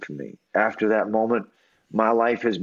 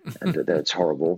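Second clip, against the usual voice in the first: ordinary delivery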